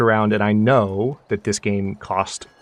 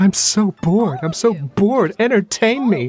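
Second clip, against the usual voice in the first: very high, whiny drawn-out moan; 11 semitones higher, 4 dB louder than usual. Retelling a character's complaints: imitating someone complaining. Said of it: "She's just down there complaining".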